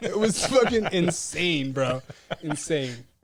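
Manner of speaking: normal talking voice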